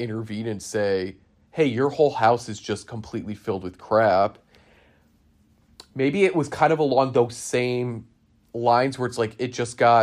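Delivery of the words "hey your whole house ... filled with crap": ordinary talk, nothing marked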